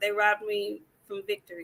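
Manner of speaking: mock deadpan, flat bland monotone with no energy. Repeating how a man said something, flat, bland delivery. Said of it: "he said it just as bland as I'm saying it right now".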